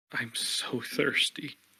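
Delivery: muttering under breath. Voicing a character who closes his eyes trying magic: muttering under his breath. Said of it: "repeating under his breath".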